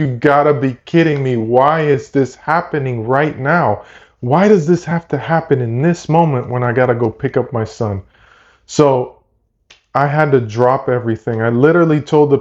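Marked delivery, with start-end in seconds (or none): 0.0-8.0 put-on frustrated, angry outburst voice. Retelling own reaction when the app crashed mid-order: retelling own frustrated outburst. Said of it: "so frustrated. I was like".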